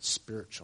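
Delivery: hushed, reverent, holy-sounding whisper on spiritual. Speaker on the Pharisees' disciples has listeners say it right: holy-sounding "spiritual". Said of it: "you have to say it right. ... You have to make it sound holy".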